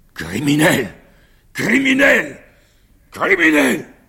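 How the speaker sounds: roaring bellow, very loud and very high, shrill. He shouts the word so it is heard in the garden, bellowing. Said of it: "vociféra les mots".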